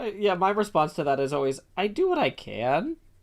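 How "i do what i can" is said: "I do what I can" pitched high with rising intonation. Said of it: "Rising Intonation".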